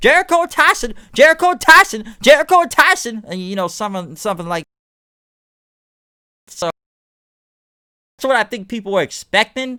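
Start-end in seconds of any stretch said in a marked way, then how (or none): 0.0-3.2 very high, loud, bad put-on Southern accent. Imitating a ringside announcer calling the brawl: J R impression with Southern voice. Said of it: "I'm trying to do a Southern voice".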